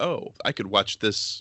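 plain

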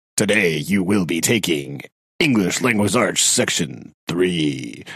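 put-on movie-trailer announcer voice. Showing how reading the same announcement repeatedly ends up: movie trailer voice. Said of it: "increasing levels of movie trailer voice".

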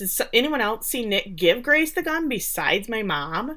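normal talking voice

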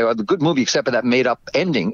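ordinary talk, nothing marked

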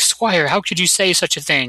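ordinary delivery

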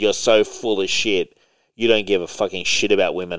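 ordinary talk

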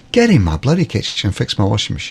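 ordinary delivery

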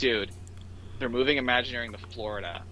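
ordinary talk

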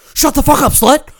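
mock screaming outburst, very high, shrill, very loud. Retelling a movie scene where a character flips out: imitating someone flipping out. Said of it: "he just flips out".

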